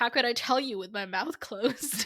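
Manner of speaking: usual speaking voice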